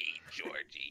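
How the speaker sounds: creepy clown voice. While friends joke about a head creeping out of the water, one does Pennywise voice. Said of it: "I just imagine like Pennywise".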